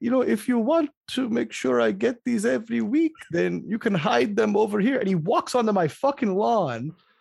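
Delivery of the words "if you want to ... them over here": high-pitched put-on Eastern European accent. Retelling what a man told him about hiding deliveries, doing an Eastern European accent. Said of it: "I'm going to do the accent".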